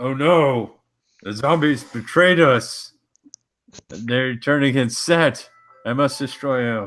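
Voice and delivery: very loud, high, dramatic acted shout. A player speaks as his character during a fight: in-character shout. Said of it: "I'm just gonna shout".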